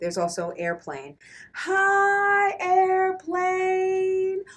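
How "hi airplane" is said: drawn-out, loud, very high-pitched calling out. Changing the voice to greet a faraway airplane: drawn-out and big. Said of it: "Why are you saying it long and big like that?".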